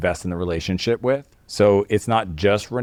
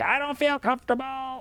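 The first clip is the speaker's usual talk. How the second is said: very high, squeaky, hushed, annoyed and mad voice; 6 dB quieter than usual. Retelling what she said to you, imitating Renee when mad. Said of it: "what she sounds like to me when she's mad".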